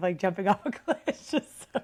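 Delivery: talking through helpless laughter. Talking about a cliff-jump comparison, laughing while talking. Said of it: "I just can't stop laughing".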